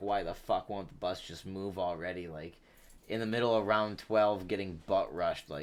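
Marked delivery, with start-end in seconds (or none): none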